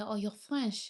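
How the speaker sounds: normal talking voice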